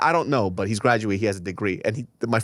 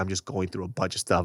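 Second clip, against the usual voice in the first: mock tearful crying voice, lower and quieter; 3 semitones lower, 5 dB quieter than usual. Retelling a relative calling back while crying: imitating someone crying. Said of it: "He's crying".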